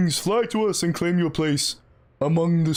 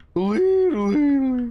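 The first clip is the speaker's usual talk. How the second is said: put-on cartoon sea creature voice, pitched up; 7 semitones higher than usual. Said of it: "my Patrick Star accent".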